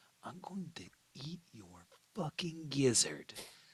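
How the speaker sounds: high beast voice. Voicing a character who slams the player into a wall: Sabretooth voice. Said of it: "he leans in and he says".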